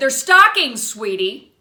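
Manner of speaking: high and loud.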